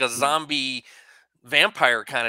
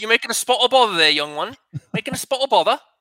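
put-on British accent; 7 semitones higher, 4 dB louder than usual. Teasing one of the boys for trying a British accent, put-on British accent. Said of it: "Were you trying your British accent there".

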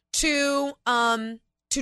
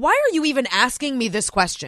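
mock exasperated, indignant tone. Imitating Hillary Clinton at the Benghazi testimony: imitating an exasperated, indignant tone. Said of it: "She gets exasperated and defensive and indignant".

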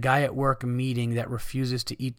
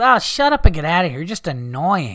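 very loud, shrill, put-on drunken yelling; 5 semitones higher, 10 dB louder than usual. Retelling a drunk woman's words to the staff, imitating her drunk voice. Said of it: "she was like that drunk".

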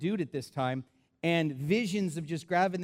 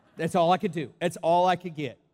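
usual speaking voice

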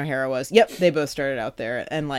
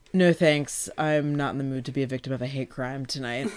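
put-on dry deadpan, quieter; 7 dB quieter than usual. Speaker reenacts him turning down a party invitation, Daniel Levy droll deadpan. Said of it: "his droll deadpan is so".

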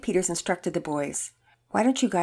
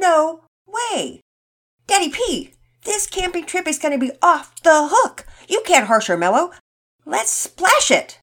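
shrill, very loud, high-pitched yell; 11 semitones higher, 8 dB louder than usual. Todd answers Daddy Peters; yelled. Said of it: "Todd yelled".

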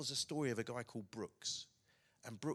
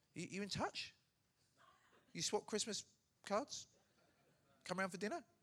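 high-pitched, playful teasing tone; 9 semitones higher than usual. Speaker playfully questioning the listener about keeping in touch with someone, teasing. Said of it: "I'm teasing you".

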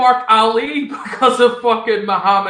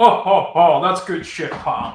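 slow, laughing, ho-ho chuckling through the words. Imitating Vince sitting laughing in the back: imitating Vince laughing. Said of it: "You know that Vince is sitting laughing, going".

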